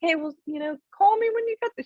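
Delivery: very high, quick put-on English accent. Quoting the speaker's English mom, in an English accent. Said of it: "so that was my English accent".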